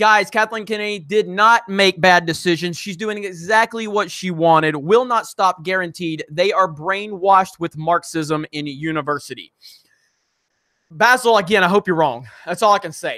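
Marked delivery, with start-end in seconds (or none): none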